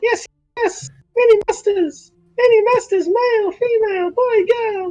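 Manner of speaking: very high, shrill, squeaky little rat voice. Playing a rat character at the computer, in a rat voice. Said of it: "when I speak in a rat voice".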